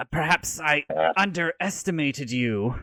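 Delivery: snake-like hissing serpent voice. Narrating a scene, the speaker voices a fanged character, hissing. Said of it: "and he hisses".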